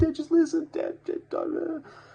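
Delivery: acted, very high, loud, tearful pleading babble. Retelling a phone call to a father: imitating own past crying, babbling. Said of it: "I'm not gonna keep imitating my chronic".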